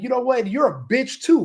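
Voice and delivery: confrontational, in-your-face tone. Retelling a stranger who gets in his face: imitating someone getting in his face. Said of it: "they'll get in my face and be like".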